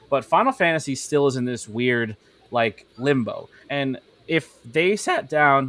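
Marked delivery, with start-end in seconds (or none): 3.7-5.7 slow voice, cracking and breaking mid-phrase. Speaking off the cuff when the voice suddenly cracks. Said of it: "oh, my voice just cracked".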